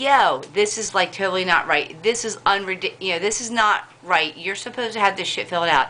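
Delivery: ordinary delivery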